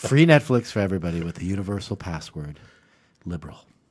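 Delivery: rehearsed, memorized-sounding politician-style delivery. Doing a requested impression of Justin Trudeau for the others: Justin Trudeau impression. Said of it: "my impersonation of Justin Trudeau".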